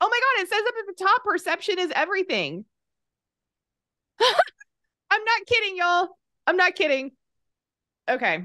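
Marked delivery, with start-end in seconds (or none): 0.0-7.1 very high, loud, high-pitched yelling. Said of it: "I just yelled in the microphone".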